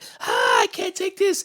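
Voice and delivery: put-on frantic, breathy, half-whispered freak-out. Retelling the film ghost's breakdown: imitating Creepy Train Ghost spazzing out. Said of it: "spazzes out".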